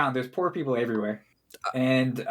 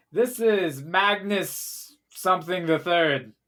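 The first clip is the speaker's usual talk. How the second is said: high, slow, formal herald announcer voice; 5 semitones higher than usual. Voicing someone announcing the player at a small castle: announcer voice. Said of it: "someone announces you and goes like".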